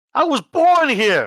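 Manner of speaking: entitled, huffy, indignant, very high and drawn out. Voicing the reporter refusing to leave a crime scene: in a huff, entitled. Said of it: "walks off in a huff".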